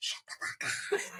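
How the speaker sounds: slow, hushed whisper. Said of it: "like, whisper".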